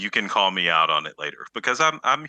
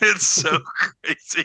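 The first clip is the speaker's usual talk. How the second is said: high, laughing giggle while talking. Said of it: "to laugh because you look like".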